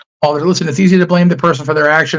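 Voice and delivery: plain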